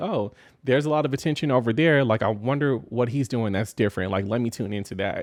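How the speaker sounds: ordinary delivery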